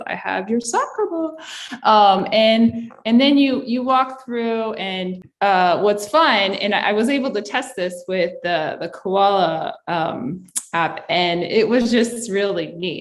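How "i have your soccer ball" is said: spooky, sinister, creepy, eerie voice. Telling students a story as their science teacher speaks, in a creepy voice. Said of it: "in a creepy voice".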